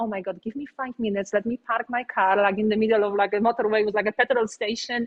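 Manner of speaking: usual speaking voice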